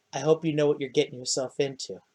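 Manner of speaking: close-in hushed half-whisper, barely audible. Narrating a scene, voicing Hillen half-whispering into a player's ear, Hillen half-whispering in your ear. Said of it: "Hillen just kind of whispers in your ear".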